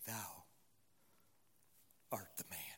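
hushed whisper with a quiver. Retelling the prophet speaking to David, imitating Nathan's quivering voice. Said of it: "I can hear the quivering voice of Nathan".

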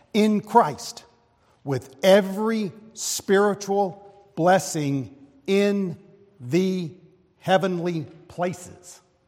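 very slow word-by-word reading. Reading a passage from Ephesians aloud to listeners, reading it slowly. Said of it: "I'm reading it slowly so it really sinks in".

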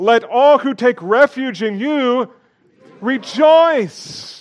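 very loud, very high-pitched, joyful voice. Showing a group how to say the verse after asking them: joyful. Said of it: "Say it joyfully".

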